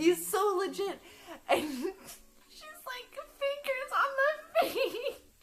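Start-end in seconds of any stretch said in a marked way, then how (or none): 3.4-5.2 high, slow laughing through the words. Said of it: "she was laughing so hard".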